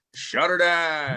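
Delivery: put-on accent, high, with "down" stretched long. Closing the show with the sign-off line: put-on accent. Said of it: "He's gonna have to get that accent a little bit better".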